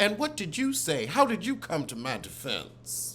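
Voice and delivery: ordinary talk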